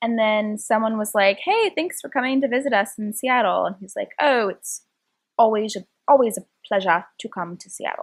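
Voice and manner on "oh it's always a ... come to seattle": poor, clumsy attempt at a British accent. Retelling a man's reply about visiting Seattle, in a bad British accent. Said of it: "I'm terrible at British accent".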